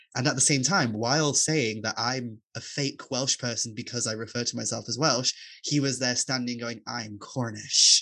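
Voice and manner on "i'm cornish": put-on loud Americanised delivery, US accent. Retelling how a man claimed to be Cornish: imitating an American accent.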